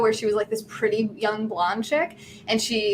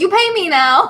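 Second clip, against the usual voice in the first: very loud, high, demanding yell; 9 semitones higher, 10 dB louder than usual. Telling how a man handing out posters yelled at a friend, retelling a man yelling. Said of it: "he's yelling at her".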